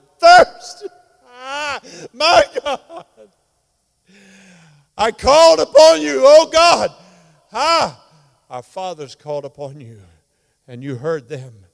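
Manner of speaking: acted agonized screaming. Retelling the crucifixion scene as the sufferer: acting out screaming in agony. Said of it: "He's screaming".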